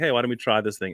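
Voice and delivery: ordinary delivery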